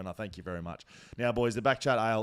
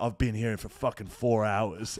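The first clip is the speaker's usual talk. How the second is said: imitated American accent. Retelling what a soldier said while leaving: imitating an American accent. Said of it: "I hear an Amer-, American accent go".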